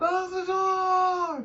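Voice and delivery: high, drawn-out yell. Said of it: "Did you actually yell out my name?".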